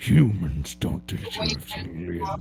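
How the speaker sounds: very deep, slow, loud, drawn-out robot-villain voice. Showing the others another Megatron voice: Hugo Weaving Megatron voice. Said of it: "I can also do Hugo Weaving".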